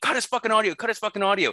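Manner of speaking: very high, slow, drawn-out screaming. Speaker retells screaming at the audio guy, retelling a scream. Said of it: "I start screaming at the guy".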